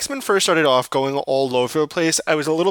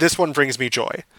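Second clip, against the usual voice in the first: usual speaking voice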